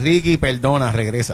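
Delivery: ordinary talk, nothing marked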